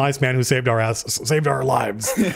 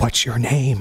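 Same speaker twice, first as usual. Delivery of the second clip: secretive, voiced stage half-whisper; 2 semitones lower than usual. Narrator voices a woman looking down at the twig, half-whispering. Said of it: "she whispers and she goes".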